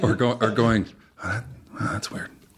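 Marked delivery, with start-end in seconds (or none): 1.2-2.3 mumbled under breath, much quieter. Speaker retells reacting to a doctor's line in an episode, muttering under breath. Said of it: "under my breath".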